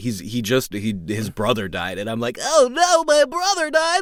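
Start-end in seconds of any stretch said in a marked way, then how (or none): 2.4-4.0 anxious, goofy, very high-pitched, loud voice. Demonstrating the voice of a character the speaker plays; anxious goofy character voice. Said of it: "he's an anxious character. He's goofy".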